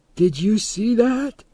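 strange, very high voice. Narrator reading a character asking the others whether they saw that, high strange voice. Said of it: "asked in a high, strange voice".

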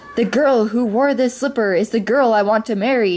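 ordinary delivery

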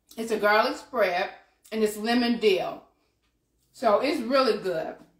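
words muffled by food, mouth full. Describing a garlic spread while eating it, talking with mouth full. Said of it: "I'm going to talk with my mouth full".

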